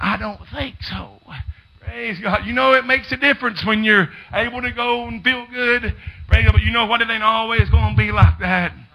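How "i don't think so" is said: faint, slow, frail, weak voice. Retelling a dying woman's reply to her visitor: imitating a weak voice. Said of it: "she was in a real weak voice".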